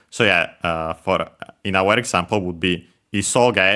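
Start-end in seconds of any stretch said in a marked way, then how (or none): 3.1-3.7 Japanese pitch accent, isoge pitched low, high, low. Explaining japanese pitch accent with an example word, low-high-low pitch on isoge. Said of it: "low, high, low".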